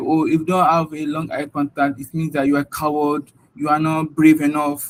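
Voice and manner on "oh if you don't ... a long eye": ordinary delivery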